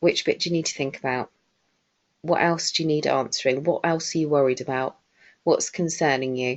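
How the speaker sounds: calm, easygoing, very relaxed and easy. Showing how you answer someone who says they need to think, very relaxed tone. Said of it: "I always say it in that kind of tone of voice as well, very relaxed".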